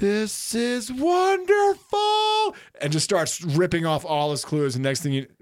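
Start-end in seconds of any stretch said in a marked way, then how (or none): 0.0-2.6 put-on tiny, very high-pitched three-year-old toddler voice. Speaker retells what a three-year-old said at the beach, in a three-year-old's voice. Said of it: "a three-year-old voice goes".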